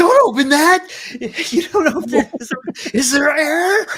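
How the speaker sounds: mock laughing mid-line, shrill, very high and loud. Quoting a favourite movie line, laughing while talking. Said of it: "I'm laughing".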